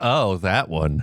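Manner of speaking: acted-out deflated, unimpressed, disappointed tone. Echoing another speaker's reaction to a name: imitating a disappointed tone. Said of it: "You sound so disappointed. It's like".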